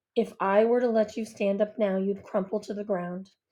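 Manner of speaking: plain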